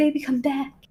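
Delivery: mock, over-the-top dramatic begging and pleading. Retelling a breakup with Twitch, imitating Twitch begging, baby come back. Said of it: "the Twitch being like".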